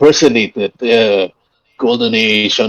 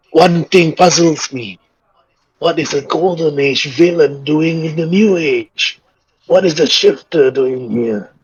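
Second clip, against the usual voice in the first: put-on frail elderly voice, higher; 4 semitones higher than usual. Voicing an old man thanking a hero: frail old man voice. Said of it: "slowly speaks out in his, like, frail voice".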